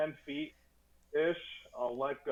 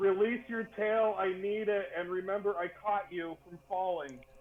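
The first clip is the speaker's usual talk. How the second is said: acted, pitched-up character voice; 6 semitones higher than usual. Calling to another character for their tail in the game: in-character yell. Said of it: "I'll yell".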